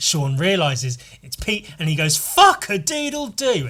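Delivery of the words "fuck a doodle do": very high, swooping, drawn-out real astonishment. Describing a film scene where Sean realizes it's zombie Pete, retelling a surprised exclamation. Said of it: "it's actual surprise".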